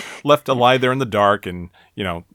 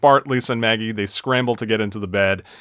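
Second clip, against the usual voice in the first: plain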